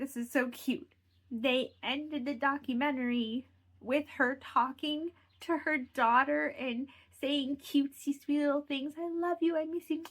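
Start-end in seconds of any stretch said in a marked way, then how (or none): 0.0-8.9 choking up, on the verge of crying. Recapping a documentary's ending, the speaker is about to cry. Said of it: "I'm going to cry".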